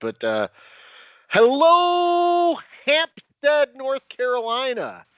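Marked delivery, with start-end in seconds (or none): 1.3-4.9 high, loud, belted shout. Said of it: "let me give a shout-out first".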